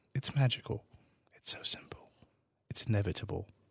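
put-on British accent. Joking with friends after announcing a switch of accent: put-on British accent. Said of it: "I'm gonna do your accent".

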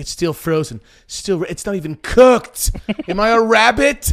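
worked-up, fuming, loud, high angry rant. Retelling his complaint that the food is still frozen, imitating him getting mad. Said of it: "he just gets so mad".

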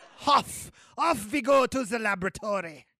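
put-on German accent. Playing the doctor just after another character thanks him, in a put-on german accent. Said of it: "Good accent, though".

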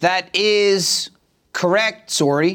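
very slow, drawn-out, put-on Canadian accent. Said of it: "implied by the Canadian accent".

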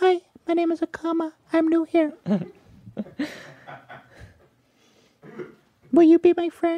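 put-on very high, shy, meek anime girl voice, mouth barely open. Voicing a new avatar introducing herself: meek anime girl voice. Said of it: "a really meek anime girl".

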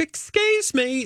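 very high-pitched put-on British accent. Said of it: "She's doing her British accent".

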